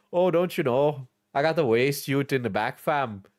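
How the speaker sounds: put-on Canadian patois voice. Describing funny people in store parking lots, imitating them in a Canadian patois voice. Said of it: "I'm talking Canadian patois again".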